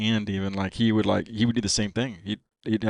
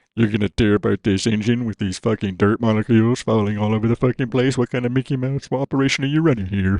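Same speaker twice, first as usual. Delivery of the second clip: put-on belittling tone, louder; 6 dB louder than usual. Retelling how Spud belittled an official: imitating Spud belittling an official. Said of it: "he's belittled the fucking official".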